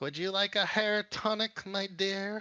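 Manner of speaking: put-on high old crone voice. Voicing an old crone selling potions from a cart, old crone voice. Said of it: "an old crone ... she goes".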